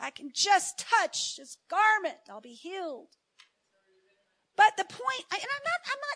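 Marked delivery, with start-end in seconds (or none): 0.0-3.1 openly sarcastic, mocking put-on tone. Acting out the woman with the issue of blood: sarcastic imitation. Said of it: "I'm being sarcastic".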